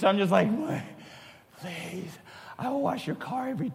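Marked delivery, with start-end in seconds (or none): 1.6-3.7 mock, hushed, very soft, quiet begging. The speaker acts out pleading with Mom and Dad, acting out begging. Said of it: "anything I could do to let them feel like sorry for me".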